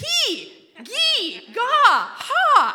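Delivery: very high, very slow, drawn-out shouting. Retelling shouting guessed mushing commands at the dogs: retelling shouted commands. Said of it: "I'll just start shouting those commands".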